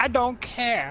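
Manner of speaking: high, mocking, put-on voice, tossed off.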